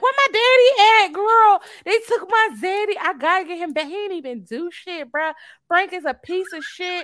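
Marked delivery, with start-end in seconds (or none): 0.0-3.9 loud, high put-on scream. Complaining about how patients are treated, acting out one waking up: imitating her screaming. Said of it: "She waking up screaming like".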